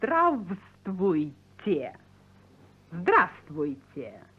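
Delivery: slow, low, careful, drawn-out Здравствуйте, sound by sound. Teaching Tom a Russian greeting, saying it again with slow careful pronunciation. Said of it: "I'll say it again more slowly".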